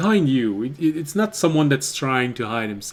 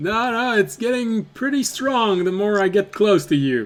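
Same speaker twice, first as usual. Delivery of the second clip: high put-on gnome voice; 7 semitones higher than usual. Voicing a gnome who walks up behind a player: gnome voice. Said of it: "the voice of a gnome".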